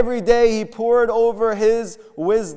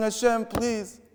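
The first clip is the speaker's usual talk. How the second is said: mock sobbing, quieter; 9 dB quieter than usual. Retelling a story of a prisoner begging God, imitating a crying plea. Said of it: "and he's crying and he's crying".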